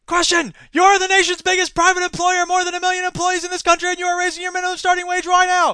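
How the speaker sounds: shrill, very loud, high-pitched shouting. Reading an all-caps interview transcript aloud the way it looks, mock yelling the transcript. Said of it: "I'll stop yelling the transcript at you".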